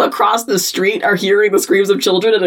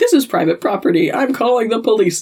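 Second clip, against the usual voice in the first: ordinary delivery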